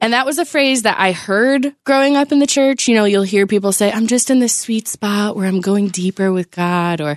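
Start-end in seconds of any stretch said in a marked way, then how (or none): 3.9-7.0 put-on breathy voice. Imitating people heard growing up in church: imitating a breathy churchgoer. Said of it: "it's always breathy".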